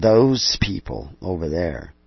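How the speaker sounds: slow, scornful, dismissive, contemptuous drawl. Describing people who use the wrong calendar, in a contemptuous voice. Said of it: "I'm using a kind of a contemptuous voice".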